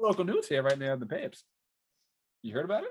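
put-on swooping, old-fashioned newspaper hawker patter. Asked what's new, the speaker answers in an old-timey newspaper seller voice. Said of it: "an old timey person trying to sell you a newspaper".

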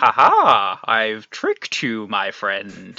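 slow, swooping, witchy storybook rabbit voice. Telling a story, the speaker voices the rabbit in a witch-like rabbit voice. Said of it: "this rabbit sounds like a witch".

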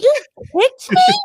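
really high-pitched, shrill, squeaky voice. Retelling how he kicked Drizella at the park, quoting her reply, high squeaky voice. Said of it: "she like went really high pitched, squeaky voice".

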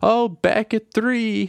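mock, very high, shrill shouted voice. Retelling a movie scene where a mom calls out a bid: imitating someone yelling. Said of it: "and then his mom yells".

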